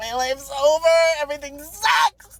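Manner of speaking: mock crying, high sobbing through every word. Retelling being asked for a license by a man, acting out past self: retelling sobbing. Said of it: "I'm sobbing and I'm like".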